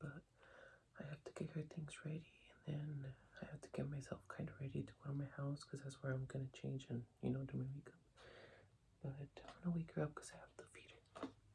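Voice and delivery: hushed whisper, kept very soft. Whispering so the sleeping baby stays asleep, before an interview today; whispering. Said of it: "I'm kind of whispering because my baby's asleep".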